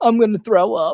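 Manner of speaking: loud, high, blubbering, tearful crying whine. Imitating Alex Jones crying: imitating Alex Jones crying. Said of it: "Alex Jones crying".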